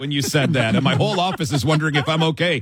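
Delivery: normal talking voice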